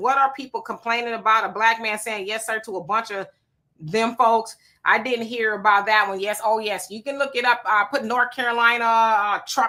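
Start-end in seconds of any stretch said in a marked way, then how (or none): none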